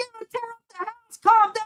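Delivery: quick, high-pitched delivery.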